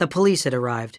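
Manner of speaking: ordinary delivery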